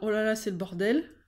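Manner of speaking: ordinary talk, nothing marked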